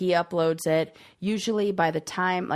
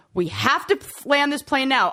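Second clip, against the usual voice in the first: freaking out, raised pitch and volume; 8 semitones higher, 6 dB louder than usual. Retelling a video of a woman on a plane: imitating someone freaking out. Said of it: "This woman freaks out on an airplane".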